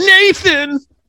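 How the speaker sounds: high, far-carrying scream. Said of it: "I screamed out".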